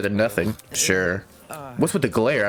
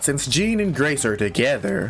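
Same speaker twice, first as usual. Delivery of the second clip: voice cracks, higher; 3 semitones higher than usual. Narrator reading a story aloud, voice cracking mid-sentence. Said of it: "my voice cracked".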